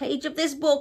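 plain

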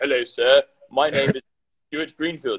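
put-on old-school, old-fashioned English accent. Answering a question about his family, imitating old-school English accent. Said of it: "My parents are like old school English".

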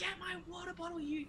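high-pitched, soft, delirious snapping. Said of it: "I'm like".

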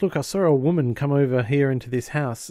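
ordinary delivery

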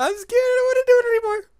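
genuinely scared. Playing a scary maze game and wanting to stop: genuinely scared. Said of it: "I'm scared".

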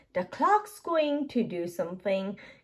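plain

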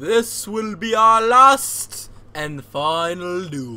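put-on Nordic, Scandinavian-style accent. Facing an old friend in a duel scene, in a Nordic accent. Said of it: "What's like a Nordic voice?".

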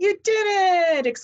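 very high, loud exultant exclamation. Luvina pokes her head out of the wagon after the whip cracks; exclaiming. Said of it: "exclaimed Luvina".

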